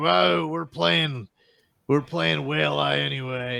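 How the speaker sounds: mock pissed-off drunken sailor voice, rough and high. Voicing an angry sailor after the others yell at him: pissed off drunk sailor. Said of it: "he kinda gets all pissed off, and he's like".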